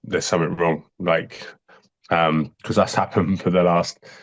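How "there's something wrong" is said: usual speaking voice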